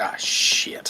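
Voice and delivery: put-on muttering under the breath. Describing how a player cursed from a hundred feet away, retelling muttering under breath. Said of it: "it was under his breath".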